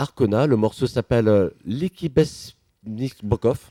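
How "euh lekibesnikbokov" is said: slow reading with a bad French accent. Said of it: "excusez mon accent".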